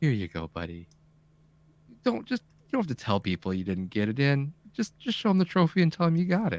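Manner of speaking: calm, soothing, reassuring guide voice. Retelling what the game's title-screen voice said when granting a trophy: imitating a soothing voice. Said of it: "He's he's a very soothing voice".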